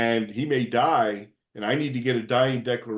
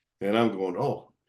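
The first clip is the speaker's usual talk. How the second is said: ordinary delivery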